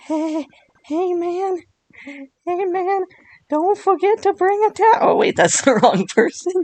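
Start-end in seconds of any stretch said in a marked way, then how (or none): 0.0-5.1 very high, mashed-up cartoon character squeak. Introducing a character's voice, a Towelie-style cartoon voice. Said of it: "it's like a mix of Herbert from Family Guy and Towley from South Park".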